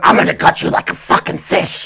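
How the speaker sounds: rough, creaky masked horror-movie killer voice. Repeating the other speaker's threat line, trying it out in a Ghostface voice. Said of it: "here comes the ghost face voice".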